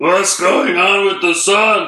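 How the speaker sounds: talking animal voice. Joking around with co-hosts, doing an impression of an animal. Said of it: "This is my impression of an animal".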